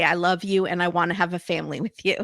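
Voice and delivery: ordinary delivery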